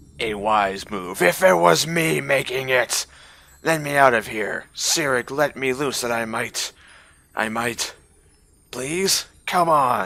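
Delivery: coarse, rough voice. A caged prisoner begs the captor to let him out, coarse voice. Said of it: "That was a rather coarse voice".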